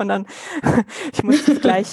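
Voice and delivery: laughing through the words.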